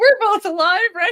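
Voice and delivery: very high, tearful, wailing crying voice. Retelling hugging a plant in the garden: retelling own past crying. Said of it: "hugging a plant and crying and going".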